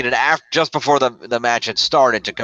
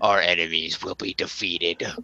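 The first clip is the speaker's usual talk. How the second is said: quiet, soft, deep bass voice full of rage; 5 semitones lower, 7 dB quieter than usual. After Harper's part it cuts over to his partner in rage, in a deep bass Erick Rowan voice. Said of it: "he has like a deep bass voice".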